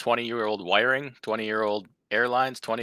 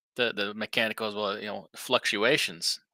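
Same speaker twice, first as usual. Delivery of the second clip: plain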